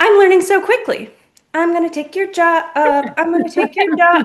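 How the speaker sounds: acted, full-on, high-pitched shouting. Telling of something running around the room turning on taps: acting out a shout.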